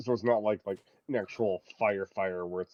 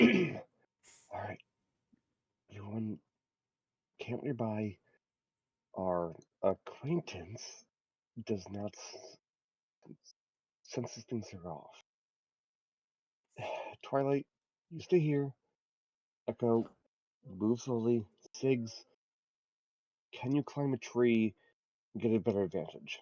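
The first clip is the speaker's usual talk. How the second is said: hushed, quiet voice in a low tone; 3 dB quieter than usual. A character turns back to the group to lay out the plan: in a low tone. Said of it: "just in a low tone".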